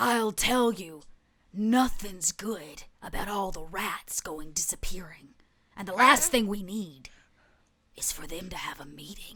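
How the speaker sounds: rough, rasping, raspy cat voice. Narrating a story, voicing a character who interrupts a player: raspy voice. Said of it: "a raspy voice interrupts you".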